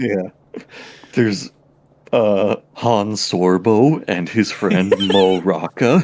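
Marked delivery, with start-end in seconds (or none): 1.1-6.0 slow, precisely enunciated voice with narrator-style inflection. Mention Han Sorbo and his friend to a listener, imitating a guy's enunciation and inflections. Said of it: "you can do the enunciation and inflections really well, too. You sound like the guy".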